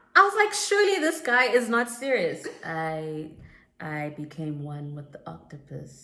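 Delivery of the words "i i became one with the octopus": slow, flat, dead-level deadpan monotone drone. Imitating a guy who seemed not serious, in a flat monotone. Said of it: "That monotone".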